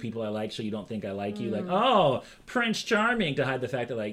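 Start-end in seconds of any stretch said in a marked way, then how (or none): 1.7-3.3 put-on, very high, childish mocking teasing voice. Explaining how people tease someone they like, acting out mocking teasing. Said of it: "I'm making fun of you".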